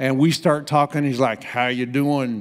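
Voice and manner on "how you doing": weak, attempted Texas drawl. Retelling an older gentleman greeting them at a pool, attempted Texas drawl. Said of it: "I can't do a Texas drawl".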